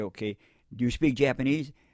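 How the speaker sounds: ordinary talk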